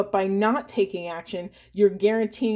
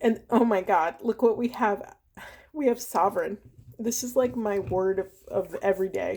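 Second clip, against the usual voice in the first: speaking through tears, tearful and crying. Speaker shares the daily word, crying while speaking. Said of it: "let me stop crying".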